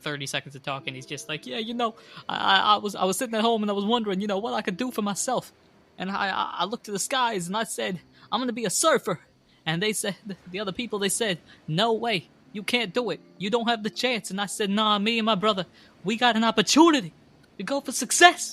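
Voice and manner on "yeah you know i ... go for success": high, loud, swelling preachy speech. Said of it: "I don't know why I'm preaching".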